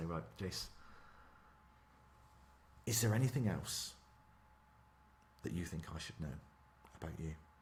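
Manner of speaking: grave, hushed, serious near-whisper. Showing how to question someone up for a role, in a hushed tone. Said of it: "get your little hushed tone out".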